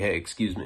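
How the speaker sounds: put-on stoned-sounding speech. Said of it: "stoned and incapacitated at this point".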